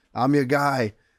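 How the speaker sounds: loud call projected across a room. Telling how he yelled across to someone in a photo moment, retelling a yell across. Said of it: "I'm yelling across to Sean Shelby".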